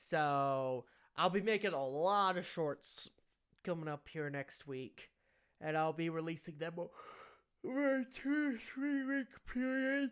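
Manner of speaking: talking through a yawn. A video creator announcing upcoming shorts to viewers, yawning while talking. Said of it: "I'm yawning".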